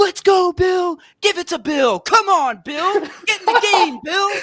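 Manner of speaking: very high, loud, nonstop screaming and hollering. Retelling a fan screaming in his ear all game: imitating a fan screaming. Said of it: "And when I say screaming".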